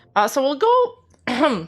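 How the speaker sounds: voice cracking. A streamer moving on after reading out stats, voice cracking. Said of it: "my voice cracked".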